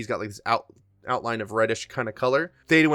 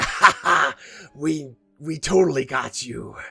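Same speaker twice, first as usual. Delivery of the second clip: slow words spoken through laughter. Narrating a game scene, the speaker voices the Inquisitors in the players' heads, laughing while talking. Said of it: "the Inquisitors like laughing and being like".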